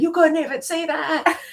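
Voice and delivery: very high, loud yell. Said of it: "he'll yell out".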